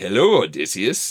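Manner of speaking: stagey, campy British actor voice. Retelling how the movie's Hermes greets Odysseus: Ewan McGregor type voice. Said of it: "this Ewan McGregor type voice".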